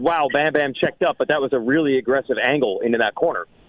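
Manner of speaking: ordinary delivery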